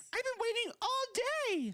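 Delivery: very high, bubbly voice, taken slowly and unhurried. Reading a My Little Pony story aloud as Pinkie Pie: bubbly Pinkie Pie voice. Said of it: "The voice".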